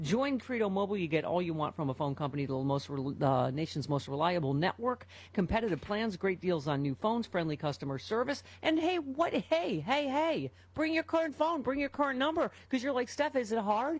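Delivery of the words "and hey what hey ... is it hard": high-pitched excited yelling. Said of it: "Why am I yelling?".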